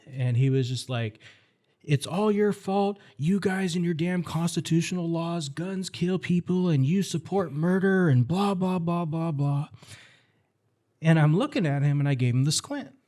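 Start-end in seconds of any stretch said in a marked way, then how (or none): 1.9-9.7 put-on irate, high-pitched old man's angry rant. Recounting an older man who yelled at him outside a doctor's office, imitating his yelling. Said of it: "this older gentleman started yelling at me".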